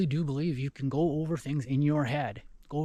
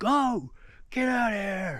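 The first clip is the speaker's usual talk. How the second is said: mock high-pitched shouted yell; 7 semitones higher than usual. Retelling making himself big to scare off a cat, reenacting a yell. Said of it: "and I'm yelling".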